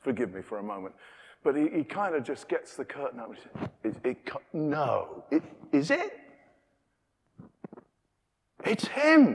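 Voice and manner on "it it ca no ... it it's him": very slow, halting, swooping, very drawn-out dramatic excitement. Acting out the father seeing his son come home: acting out an excited father. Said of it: "the father is so excited".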